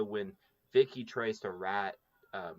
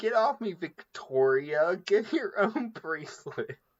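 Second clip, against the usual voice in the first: put-on drunken voice, high-pitched and loud; 10 semitones higher, 7 dB louder than usual. Recalling a funny scene from a favorite episode; drunk Janet impression. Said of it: "drunk Janet".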